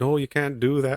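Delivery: bad, high-pitched, failed put-on Irish accent. Retelling a story's plot, voicing the irish man's reply in a failed irish accent. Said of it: "I can't do an Irish accent".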